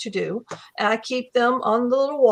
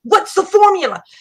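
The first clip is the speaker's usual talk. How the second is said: shrill, loud scream; 8 semitones higher, 6 dB louder than usual. Retelling a woman at a writing critique demanding a formula: imitating a woman screaming. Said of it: "She's screaming at me".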